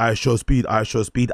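plain

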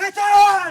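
high-pitched, loud angry shouting.

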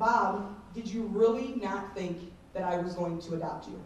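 ordinary delivery

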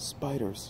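quietly. Asked what is moving in their ears, the narrator answers quietly. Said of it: "I said quietly".

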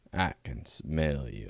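very deep, slow, drawn-out mock narrator voice. Imitating a soundboard clip: Morgan Freeman parody voice. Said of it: "That's the Morgan Freeman type of parody".

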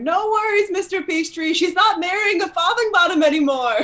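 smug, gloating yell. Galloping off, Constance yells over her shoulder at Mr. Peachtree, smugly yelling. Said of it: "really smugly yell over her shoulder".

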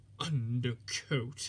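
muttered in disgust. Narrator reads Henry the engine, laughed at by painters: muttered in disgust. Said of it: "muttered Henry in disgust".

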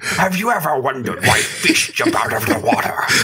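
put-on breathy English presenter voice, British accent, explainer-host style. Taking turns doing voices, speaker tries a Tom Scott impression. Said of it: "That's a really good impression".

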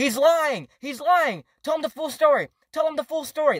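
repeated put-on shouting. Telling about a phone call with an angry man, retelling a yell. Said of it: "I was yelling that to him on the phone".

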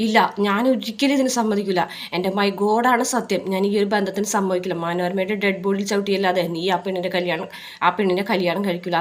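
ordinary talk, nothing marked

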